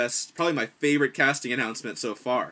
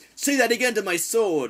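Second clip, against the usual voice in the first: proud-sounding character voice, higher and louder; 10 semitones higher, 5 dB louder than usual. Showing how a small mouse character could sound: proud character voice. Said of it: "sort of a proud kind of".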